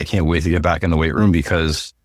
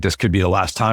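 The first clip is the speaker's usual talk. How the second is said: ordinary talk, nothing marked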